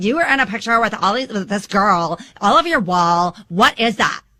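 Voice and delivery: accusatory tone. Showing how not to ask about pictures on the wall: accusatory tone. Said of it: "with an accusatory tone".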